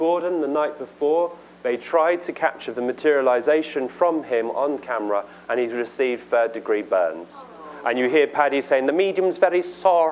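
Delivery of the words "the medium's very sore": clumsy, poorly done put-on Irish accent. Quoting what Paddy said, bad Irish accent. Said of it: "That's my Irish accent, really badly".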